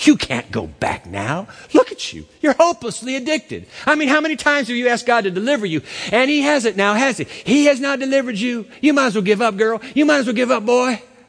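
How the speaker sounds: harsh accusing voice. Retelling an accusing voice the speaker used to hear: harsh accusing voice. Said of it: "a harsh voice of accusation".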